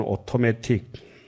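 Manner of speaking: automatic said with British t sounds. Showing how the english word automatic is said: british accent. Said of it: "영국 발음은".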